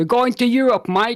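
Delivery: passable put-on Australian accent. Talking about a tournament with a co-host, the speaker slips into an Australian accent. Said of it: "why did I say that in an Australian accent?".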